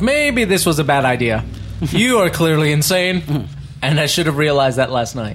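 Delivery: ordinary talk, nothing marked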